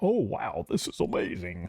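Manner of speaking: terrible put-on goofy voice, low and slow. Explaining that Star Wars is not their thing: terrible goofy impression. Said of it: "like a terrible goofy impression".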